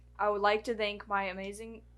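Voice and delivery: ordinary talk, nothing marked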